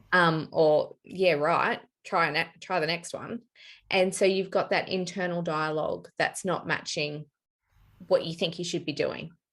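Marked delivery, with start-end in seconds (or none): none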